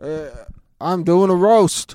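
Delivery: very slow, loud, dazed drawl, dragged out. Imitating a comedian who was very stoned at his stand-up: imitating Jeff Ross stoned. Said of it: "I think he was just super stoned".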